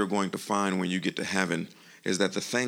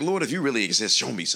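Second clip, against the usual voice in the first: acted flippant, taunting, facetious mocking tone; 4 semitones higher than usual. Retelling a young gentleman's challenge to the Lord: imitating a facetious challenge. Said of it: "but in a facetious way, he was like".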